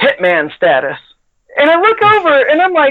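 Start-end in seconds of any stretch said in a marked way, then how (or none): 0.0-1.0 put-on stern tone. Retelling a fellow tester's answer to a question about his gloves: imitating a stern line. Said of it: "looks over with the sternest face possible and goes".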